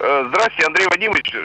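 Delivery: ordinary delivery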